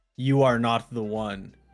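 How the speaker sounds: big, resounding, booming voice. Game master voicing a voice that seems to come from a door, booming voice. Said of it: "you all hear this booming voice".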